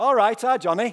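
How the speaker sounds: very loud, high, attempted Yorkshire accent. Retelling what she said after dropping him on a chair, in a yorkshire accent. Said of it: "said in her best Yorkshire accent".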